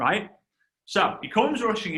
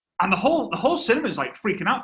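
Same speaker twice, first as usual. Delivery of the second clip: normal talking voice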